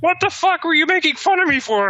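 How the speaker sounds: very high, squeaky little puppet voice. Answering the others who were mocking him, the speaker does a Kermit the Frog impression. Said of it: "You do a really good Kermit impression".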